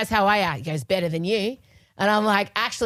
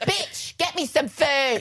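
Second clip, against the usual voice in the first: put-on toddler voice, pitched much higher; 7 semitones higher than usual. Describing a little girl who picked up someone's way of talking, in a toddler voice. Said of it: "my voice as a toddler and Scott's".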